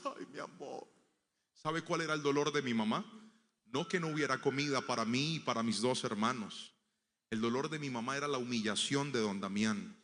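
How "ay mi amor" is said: play-acted tearful whisper, very hushed. Retelling the mother's reply after the food failed: imitating mother crying. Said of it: "se puso a llorar y dijo".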